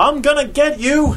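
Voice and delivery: very high-pitched, shrill yell. The second baseman, chasing a runner toward home: yelled. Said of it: "the second baseman yelled".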